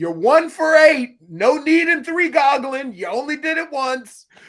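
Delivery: play-acted, high-pitched shouting yell. Retelling yelling a player's stats during a game: retelling yelling at a game. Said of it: "So I was yelling during the game".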